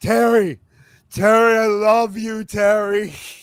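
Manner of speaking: loud drawl, every word drawn out slowly. Asked for a voice, the speaker does a quick Goldust impression. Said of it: "that was my gold dust impression".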